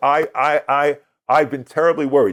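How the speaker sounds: tearful, stumbling, stammering woman's voice. Retelling what a woman said when she came to the stage, imitating a woman crying. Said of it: "She's crying".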